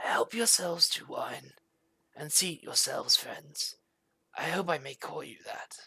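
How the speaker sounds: rasping dry voice. Voicing a masked figure inviting guests to sit and drink: dry raspy voice. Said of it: "dry, raspy voice".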